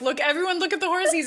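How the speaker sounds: acted-out, thrilled, excited, high shout. Retelling pointing out horses to the kids while driving by: imitating own shouting. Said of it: "I'm shouting to".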